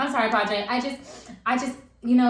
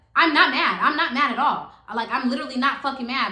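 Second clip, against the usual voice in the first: mock voice raised in heated irritation; 4 semitones higher, 3 dB louder than usual. Retelling an argument in the car, imitating a woman's raised voice. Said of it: "but now her voice is raised".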